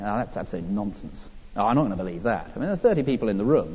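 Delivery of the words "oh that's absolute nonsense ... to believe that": low, hushed heckling mutter under the breath. Recalling a front-row man who heckled all week, the speaker imitates his muttering. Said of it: "he was muttering under his breath".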